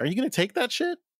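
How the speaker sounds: play-acted shrill, very high taunting jeer. Retelling how a villain's voice taunted a character: imitating a taunting voice. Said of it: "taunting her, going like".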